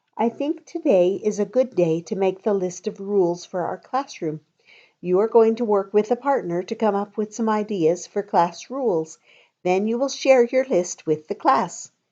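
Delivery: plain reading voice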